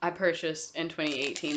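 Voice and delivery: ordinary talk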